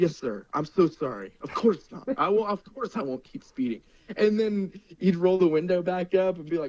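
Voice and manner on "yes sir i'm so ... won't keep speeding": meek, sweet, polite, apologetic tone. Speaker retells a driver talking to a police officer, imitating his polite nice mode. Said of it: "go back into his nice mode".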